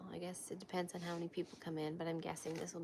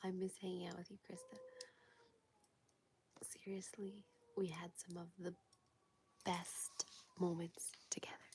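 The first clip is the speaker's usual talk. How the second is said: quiet, hushed voice; 4 dB quieter than usual. Chatting on a live stream while a child sleeps: speaking quietly. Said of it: "I'm trying not to be loud".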